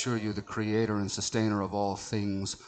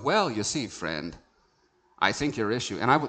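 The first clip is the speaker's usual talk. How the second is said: acted snotty, snooty tone. Re-enacting his own earlier words to someone in this conversation: mock-snotty tone. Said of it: "that sounded snotty".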